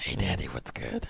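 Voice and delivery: whispered, breathy, flirty and seductive. Showing friends how she talks to men, the speaker demonstrates a flirty seductive voice. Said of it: "Like that".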